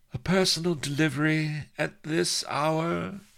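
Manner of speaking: very high, honeyed, languid, bored sultry drawl. Narrator reading a woman's voice from another room about a late delivery: bored, sultry drawl. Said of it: "honeyed contralto, laden with boredom and sex appeal".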